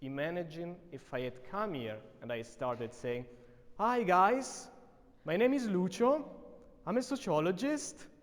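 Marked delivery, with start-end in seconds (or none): 3.8-8.0 rising pitch at end of guys, Lucio, sociologist. Demonstrating a self-introduction, rising pitch at each phrase end. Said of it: "going up at the end of the sentence".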